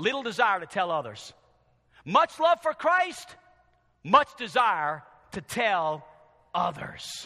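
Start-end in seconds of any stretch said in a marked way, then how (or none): 2.1-7.3 slow, heavy stress on the word much. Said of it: "little love for Christ".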